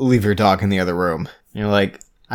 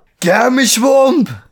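put-on yell, much higher and louder; 7 dB louder than usual. Recounting a scene where Sherlock grabs someone by the collar, imitating Sherlock yelling. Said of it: "he's yelling that".

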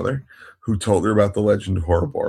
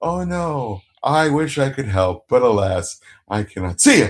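mock deadpan delivery, slower; 3 semitones higher than usual. Retelling how a woman hurried off instead of helping with robot maintenance, imitating a deadpan excuse. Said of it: "It's the best deadpan delivery".

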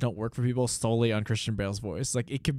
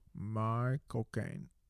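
speaking with the lower jaw pushed out and forward; 8 dB quieter than usual. Trying an impression after being taught: Michael Caine impression. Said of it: "Teach me".

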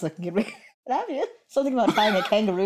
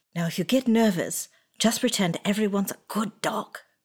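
whispering; 4 dB quieter than usual. A player's character whispers to a companion before going on stage, whispering. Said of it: "I go to Koyos and I whisper".

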